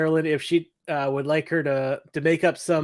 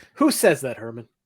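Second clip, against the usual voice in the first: ordinary talk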